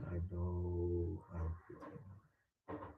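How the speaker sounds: soft, low half-whisper with drawn-out "know". Guiding a breathing exercise, showing how to half-whisper to yourself. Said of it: "Just whisper to yourself".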